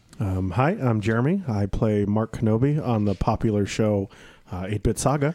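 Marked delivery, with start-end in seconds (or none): none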